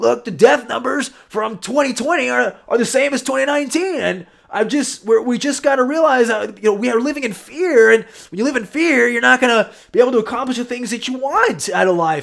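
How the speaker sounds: loud, high pumped-up speaker voice. Retelling what a speaker said on a viral video call: Tony Robbins impression. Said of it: "I don't know if that's a good Tony Robbins impression".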